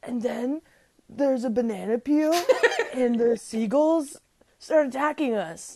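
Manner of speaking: storybook-style literary narrator voice. Imagining the other speaker narrating a memory, imitating Ryan's voice. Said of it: "That's my impression of your voice".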